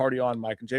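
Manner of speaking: usual speaking voice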